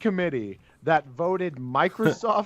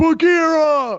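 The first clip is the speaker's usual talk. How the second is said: high, slow, loud yelling. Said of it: "Baloo yelling".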